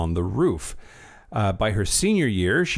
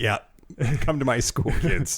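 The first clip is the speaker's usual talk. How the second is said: offhand, casual dude voice; 3 semitones higher than usual. Joking about a school that sounds made up: imitating a dude named Lee. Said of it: "some dude named Lee is like".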